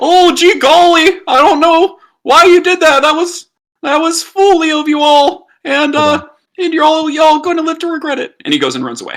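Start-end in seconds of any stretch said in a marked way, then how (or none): 0.0-8.3 very high, loud cartoon sidekick voice, stumbling over words. Voicing a dangerous creature taunting the party before it runs away: Morty-like voice. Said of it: "Sounds like Morty".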